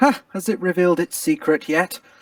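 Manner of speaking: overly cheerful tone.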